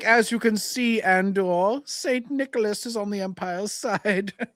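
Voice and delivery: lofty, haughty, snobbish voice, pitched very high. Discussing a Star Wars picture, speaker narrates in a put-on haughty Imperial voice. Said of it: "I'm just trying to sound like a haughty Imperial".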